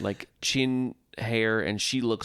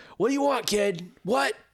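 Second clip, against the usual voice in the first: mock piercing, shrill, very high screech; 11 semitones higher than usual. Retelling how a server treated a kid: imitating someone screaming. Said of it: "screaming at the kid".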